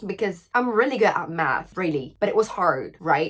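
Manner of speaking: put-on, low American English accent. French speaker switching into English, in an American accent. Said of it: "D'où le petit accent américain".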